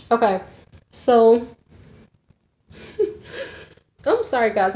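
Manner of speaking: talking while cracking up, bubbling with laughter. Apologizing to viewers after getting distracted, laughing while talking. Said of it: "I'm laughing".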